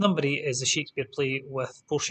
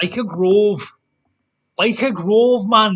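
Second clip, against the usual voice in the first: very loud, drawn-out put-on Geordie accent; 7 semitones higher, 11 dB louder than usual. Quiz host repeats the answer byker grove: put-on geordie accent. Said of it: "It's a terrible accent. I do it quite well".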